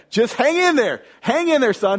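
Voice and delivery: high, yelled, encouraging voice. Speaker retells his dad yelling back to him during a game; retelling dad's yell. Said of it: "he's yelling back".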